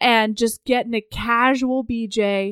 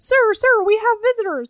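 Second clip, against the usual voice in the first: put-on child voice, higher; 9 semitones higher than usual. Retelling a scene from a book, acting out a nine-year-old squire. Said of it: "this nine-year-old comes up and he's like".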